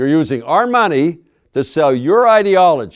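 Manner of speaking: snarling, high and loud. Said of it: "him snarling at me".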